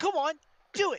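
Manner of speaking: shrill, high, loud, cheeky, defiant voice. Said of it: "he just puts his arms out and he says".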